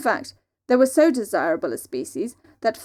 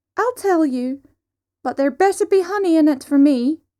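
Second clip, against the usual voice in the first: squeaked out high and loud; 6 semitones higher, 6 dB louder than usual. Narrating a story where Dewar answers Cat with a squeak. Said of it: "he squeaked".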